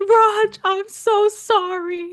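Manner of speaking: put-on, very high, loud yelling. Retelling being sick at the toilet and calling out to Raj: retelling a yell. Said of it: "I'm yelling out for Raj".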